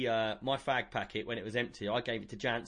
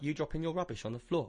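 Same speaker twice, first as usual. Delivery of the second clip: plain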